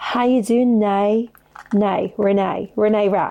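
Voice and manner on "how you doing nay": attempted, fake Australian accent. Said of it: "Is that Australian, maybe?".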